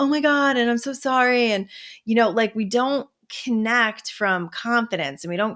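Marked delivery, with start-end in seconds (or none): 0.0-1.5 put-on high-pitched, flustered little kid's voice. Retelling how people act when pulled over: imitating a flustered kid apologizing. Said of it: "do we turn into, like, these little, like, kids".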